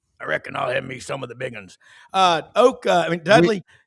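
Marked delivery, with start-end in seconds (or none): 0.2-1.8 creaky, rough, raspy character voice from the throat. Quoting a restaurant scene from the movie Sling Blade: Sling Blade impression. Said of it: "where they filmed the movie Sling Blade".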